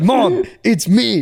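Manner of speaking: high-pitched yelling. Retelling a phone call with his mom: imitating himself yelling. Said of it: "dude, I'm yelling".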